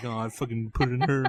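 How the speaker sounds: mumbled, indistinct, words running together. Retelling what another speaker said while someone else talked: imitating Nick mumbling.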